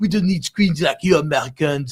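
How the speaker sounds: rough, sloppy fake French accent. Quoting cafe-goers talking down to Americans, in a put-on French-ish accent. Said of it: "that's kind of a French accent".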